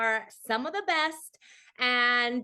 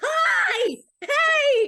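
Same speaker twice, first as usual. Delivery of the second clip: very loud, very high mock excited scream; 9 dB louder than usual. Speaker retells greeting Dara in line at a convention, retelling excited screaming. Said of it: "I actually like was screaming".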